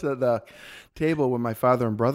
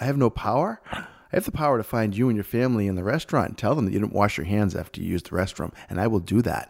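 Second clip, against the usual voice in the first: plain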